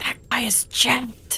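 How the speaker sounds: soft, breathy, hushed whisper. Playing a character who whispers to Elena about a man: whispering. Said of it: "I'm just gonna whisper to Elena".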